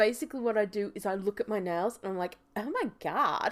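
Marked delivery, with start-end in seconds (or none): 2.6-3.5 put-on teenage valley girl voice. Explaining a voice-acting trick, the speaker demonstrates the Valley Girl voice. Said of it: "So for Valley Girl".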